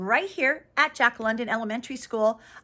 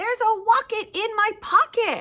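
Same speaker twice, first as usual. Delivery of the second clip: very high, excited, enthusiastic delivery; 10 semitones higher than usual. Reading a picture book aloud to young listeners, enthusiastic. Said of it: "I say that with a lot of enthusiasm".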